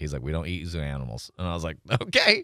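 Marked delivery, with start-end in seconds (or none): 0.2-1.3 mock flat deadpan, much lower and quieter. Retelling a guy who brought in a tarantula answering a question, retelling a deadpan reply. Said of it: "Just deadpanned every time".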